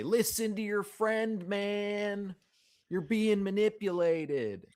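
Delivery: very high shout, man drawn out. Shouting at workers while leaving the room: shouting in character. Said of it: "I shout at them as we exit the room".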